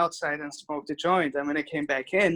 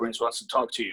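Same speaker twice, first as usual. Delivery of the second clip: deep, low voice kept soft; 5 semitones lower, 5 dB quieter than usual. Retelling a phone call where a new voice came on the line, imitating a deep voice. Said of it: "this deep voice came on".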